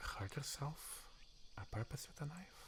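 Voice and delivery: very soft, hushed voice full of dread.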